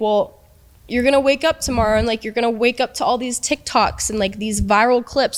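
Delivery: amused, laughter running through the words. Retelling someone mocking her on a live stream: imitating Jack laughing while talking. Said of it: "He was laughing about it".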